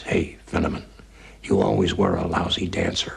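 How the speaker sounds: put-on little, weak, feeble voice. Helping a man back to bed, the speaker retells his words, retelling a little weak voice. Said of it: "this little weak voice says".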